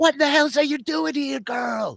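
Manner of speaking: furious, angry scream, very high pitch. Narrating a scene where Daniel screams at everyone and turns on someone, retelling Daniel's angry scream. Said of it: "He's like screaming at everybody".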